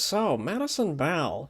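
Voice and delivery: sing-song put-on voice, pitch swinging up and around. Retelling a locker room scene from the movie: Crawford impression. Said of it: "That's a great Crawford impression".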